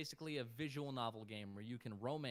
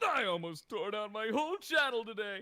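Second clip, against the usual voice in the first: shrill cartoon-dad voice, belted very high and very loud; 11 semitones higher, 12 dB louder than usual. Talking to the audience, accidentally slipping into a Hugh Neutron voice. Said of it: "I went into Hugh Neutron there for a second".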